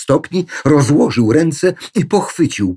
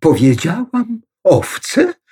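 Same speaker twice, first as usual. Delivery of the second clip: scared, caught-out, frightened, pitched-up voice; 6 semitones higher than usual. The tour guide asks back after Zosia questions her words: frightened. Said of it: "Zapytała przestraszona przewodniczka".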